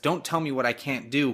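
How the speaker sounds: usual speaking voice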